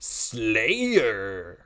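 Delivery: word drawn out in an announcer-style delivery. Retelling how the Halo announcer said Slayer: Halo announcer with Pauly Shore cadence. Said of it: "every time that happens, I'm just like".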